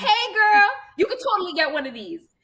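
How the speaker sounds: very high, sing-song hollered shout. Recalling driving her pink truck, she re-enacts calling out the window: retelling her own yell. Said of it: "And I yell out the window".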